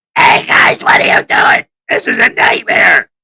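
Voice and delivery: loud, rough, raw put-on character voice, unprocessed. Giving a tiny taste without the voice machine, put-on character voice, no machine. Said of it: "I'm not going to put the machine on and I'm going to do his voice".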